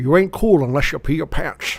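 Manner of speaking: put-on Scottish accent. Quoting a Billy Madison line among friends, in a Sean Connery impression. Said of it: "I'm going to read them as Sean Connery".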